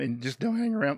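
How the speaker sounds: voice cracking. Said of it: "voice crack there".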